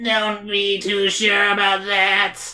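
slow, flat, harsh metallic mechanical robot voice. Reading a story aloud, voicing a hidden villain: harsh metallic voice. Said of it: "says a harsh metallic voice".

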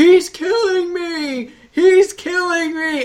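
very high, dragged-out, drawn-out screaming. Speaker retelling a movie scene where a man screams for thirty seconds: retelling a scream. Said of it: "he's screaming at the top of his lungs".

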